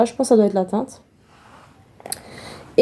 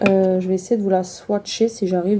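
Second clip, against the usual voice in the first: normal talking voice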